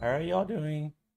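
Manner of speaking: voice cracking. Greeting everyone: voice cracking. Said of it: "my voice cracked there".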